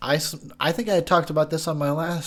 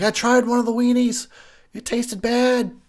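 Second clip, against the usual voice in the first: high, loud, freaking-out outburst; 8 semitones higher, 6 dB louder than usual. Retelling what a woman on screen says: imitating someone flipping out. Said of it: "She's flipping out".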